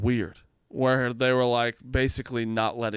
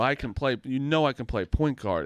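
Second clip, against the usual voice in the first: normal talking voice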